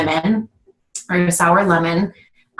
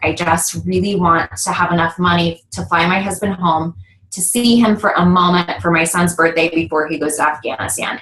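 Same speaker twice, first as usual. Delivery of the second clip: ordinary delivery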